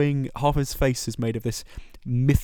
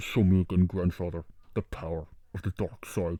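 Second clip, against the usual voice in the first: very deep, bubbly voice muffled behind a mask; 7 semitones lower, 5 dB quieter than usual. Quoting a film villain's line as an impression: Kylo Ren impression. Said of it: "I'm glad we can do an impression".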